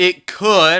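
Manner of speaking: stress on could.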